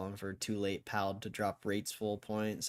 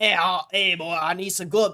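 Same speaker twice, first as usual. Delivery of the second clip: very loud, very high, shrill, botched New York accent; 9 semitones higher, 14 dB louder than usual. Speaker tries a New York accent right after admitting they can't, bad New York accent. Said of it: "I can't do a New York accent".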